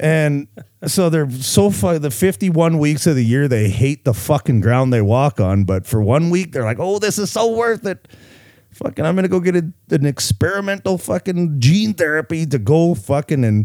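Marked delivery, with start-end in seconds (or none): 6.8-13.7 mocking, pitched-up tourist voice. Mocking people who want vaccine passports for a Maui trip: impersonating vaccinated tourists. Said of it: "I kinda like that impersonation".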